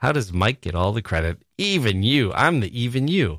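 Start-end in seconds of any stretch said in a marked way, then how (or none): 1.6-2.3 put-on snarling, sneering disdain. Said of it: "You can hear the snarl in the voice".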